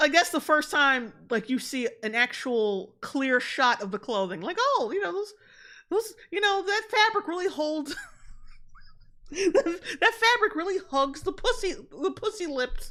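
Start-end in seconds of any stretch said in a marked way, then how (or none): 4.6-12.9 higher, laughter barely held back mid-sentence. Reading out a viewer's comment, trying not to laugh while talking. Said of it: "I was trying not to laugh while saying it".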